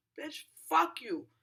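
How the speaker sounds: mock heated yell. Retelling a fight with a woman on the mic: retelling her own yell. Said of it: "So as I'm yelling".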